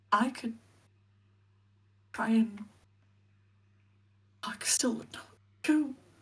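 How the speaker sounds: sad, mournful voice put on for effect. Playing a character kept alive by magic, speaking in a sad voice for effect. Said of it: "I was trying to do a sad voice for effect".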